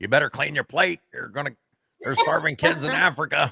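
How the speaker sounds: very loud, shrill, stern scolding mother voice. Recalling a waitress acting like their mom, imitating a scolding mom. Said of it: "be like my mom".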